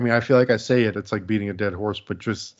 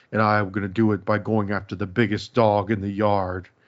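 fierce, full-on, dead-serious intensity. Retelling a wrestler's threat after grabbing someone by the throat: imitating Nathan Jones, intense. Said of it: "really intense".

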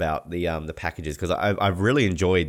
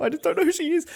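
put-on emotional, fake choked-up voice, higher. Answering another speaker who has never heard of an athlete: mock emotional. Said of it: "I'm emotional right now".

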